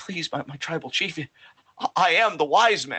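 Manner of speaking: tearful, stammering, begging tone. Retelling a wrestling scene: imitating Paul Heyman crying. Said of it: "and he's crying, and he's like".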